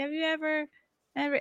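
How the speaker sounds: put-on very high, soft, stumbling, halting little-kid voice. Retelling a viral clip of a little kid: imitating a kid stumbling over words. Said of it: "couldn't get his words out".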